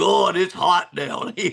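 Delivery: rough, creaky put-on voice, done for laughs. Recalling a player he recruited from West Virginia: Jed impression. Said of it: "that's his Jed impression".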